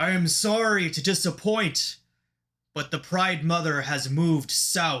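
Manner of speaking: voice booming out, carrying over everyone. Game master voices a character turning to the party, in a booming voice. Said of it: "his voice booms out".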